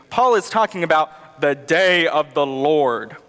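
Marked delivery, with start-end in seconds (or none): 1.4-3.0 low, ominous, spooky scary voice. Speaker explaining a passage from 1 Thessalonians just read, in a scary voice. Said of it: "You gotta say it in a scary voice".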